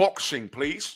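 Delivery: cheesy put-on British accent. After thanking a supporter, the speaker turns to boxing in a corny British accent. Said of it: "In my corny British accent".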